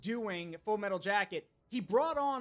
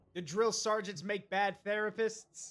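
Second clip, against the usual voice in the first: plain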